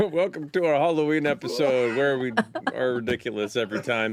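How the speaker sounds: talking through laughter. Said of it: "Why are you laughing?".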